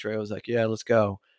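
ordinary talk

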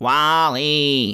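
put-on robot character voice. Podcast hosts announce today's movie pick: WALL-E voice. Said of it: "please don't do the voice".

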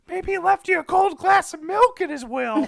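piercing, very high, full-volume shriek. Retelling an off-screen line from a movie: imitating Michael Shannon screaming. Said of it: "you can hear Michael Shannon scream".

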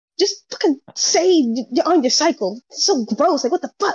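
put-on, high, heated, angry ranting voice. Retelling how her mom cursed out an aunt: imitating someone cursing out angrily. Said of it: "basically almost curse my aunt out".

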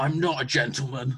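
put-on growl. Speaker retells the line Jack says right before a kiss, growling like Jack. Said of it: "He growls the words".

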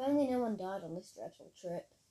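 usual speaking voice

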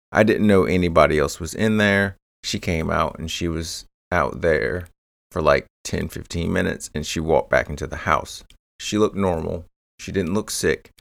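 ordinary talk

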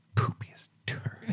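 very quiet, breathy, barely audible whisper. Retelling how Brad said it: imitating Brad saying it quietly. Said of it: "he says it quiet".

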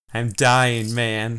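weeping, crying through the words while speaking. A fatally wounded man speaks to the police who found him; crying. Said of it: "He starts to cry".

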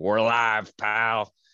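badly done put-on wrestling promoter voice. Opening the talk with a quick impression: bad Vince McMahon impression. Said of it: "my worst Vince McMahon impersonation ever".

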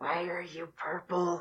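fearful, cautious, very quiet, hushed small voice. Voicing a frightened creature meeting a stranger: very quiet voice. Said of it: "they just very quietly just go".

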